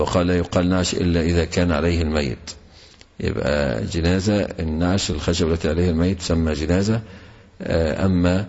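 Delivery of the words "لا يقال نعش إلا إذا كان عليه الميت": usual speaking voice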